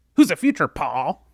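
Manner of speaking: mocking, taunting, high-pitched, loud voice. Reenacting the mocking line he delivered in Braun's voice: mocking high-pitched Braun impression. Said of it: "he kind of nailed Braun's voice".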